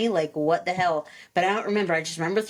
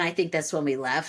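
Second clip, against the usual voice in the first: ordinary talk, nothing marked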